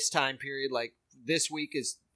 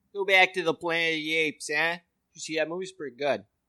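put-on Boston accent in an old-timer voice. Riffing on old-fashioned racism, the speaker does an old 1981 Boston guy accent. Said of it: "That's like an old racist guy from 1981 Boston".

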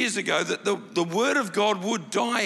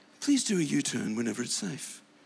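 put-on calm, low, patient satnav-style voice with English accent; 6 semitones lower, 4 dB quieter than usual. Speaker imitates the GPS in their car, in a patient English-accented voice. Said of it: "She's got an English accent".

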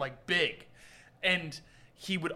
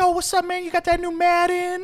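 very high-pitched voice; 13 semitones higher, 4 dB louder than usual. Telling a story about a big man, imitating his high-pitched voice. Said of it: "he had this high pitched voice".

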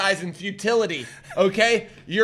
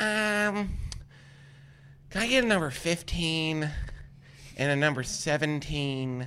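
put-on slow, sweet little old lady voice, drawn-out um; 5 semitones lower, 10 dB quieter than usual. Retelling an old lady ordering lottery tickets at a gas station: imitating an old lady ordering. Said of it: "She's like".

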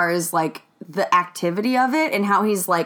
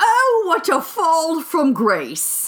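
put-on British documentary narrator accent, raised; 8 semitones higher than usual. Retelling a scene's transition, doing the line in a British documentary narrator accent. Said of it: "I get to do my British accent".

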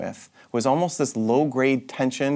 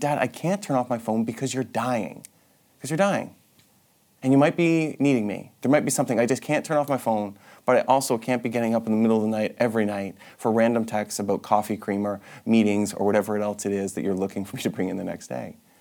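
ordinary delivery

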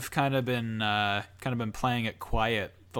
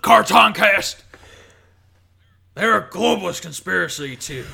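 put-on conspiracy ranting voice, higher and louder; 8 semitones higher, 10 dB louder than usual. Answering a request to rant about the show: Alex Jones impression. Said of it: "can you do an impression of Alex Jones".

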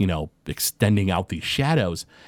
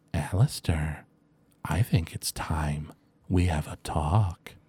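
piercing, low, slow creature voice; 4 semitones lower, 6 dB quieter than usual. Voicing a shadow creature speaking out of the darkness: piercing shadow creature voice. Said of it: "a voice kind of pierces through the darkness and says".

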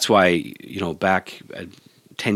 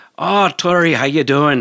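bad put-on Irish accent, pitched up; 8 semitones higher, 5 dB louder than usual. Retelling the bartender's daily greeting to the speaker, imitating Jimmy, bad Irish accent. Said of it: "That was a horrible Irish".

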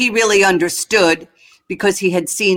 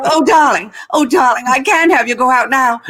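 breathless, half-British, half-American studio-style speech; 6 semitones higher than usual. Speaker illustrating how women talked on the MGM lot, breathless, strange little MGM voice. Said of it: "speak in a breathless, very strange little way".

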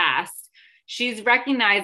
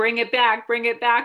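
ordinary delivery

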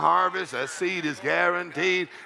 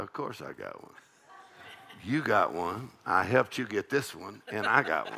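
mock mutter under breath, much quieter, lower, slower; 9 semitones lower, 6 dB quieter than usual. Retelling what he said under his breath while taking a man to lunch. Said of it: "But under my breath".

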